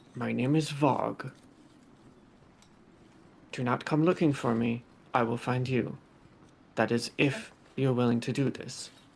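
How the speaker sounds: hushed, secretive, low tone. Voicing a hobgoblin giving his name and a warning, in a hushed tone. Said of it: "in a hushed tone".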